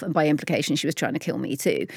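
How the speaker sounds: fast, blurted-out delivery.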